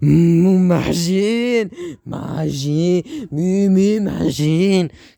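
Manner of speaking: exaggerated mock anger. Retelling a show scene where a character gets really angry: exaggerated imitation of an angry character. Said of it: "that's a little over-exaggerated".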